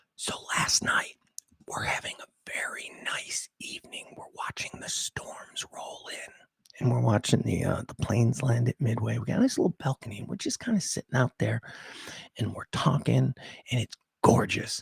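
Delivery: soft, breathy, hushed storytelling whisper. Thinks someone came down the stairs, so tells the story whispering. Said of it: "So I got to whisper".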